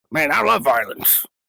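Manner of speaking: sophisticated put-on film robot character voice. Trying the voice again after being told it sounds like Hound: Hound voice. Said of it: "You sounded more like that".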